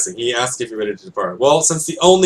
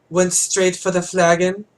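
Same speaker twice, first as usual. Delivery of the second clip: prissy, dainty, pitched-up put-on voice; 6 semitones higher than usual. Giving a character a new voice he should have: sissy put-on voice. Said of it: "it should be like something really sissy".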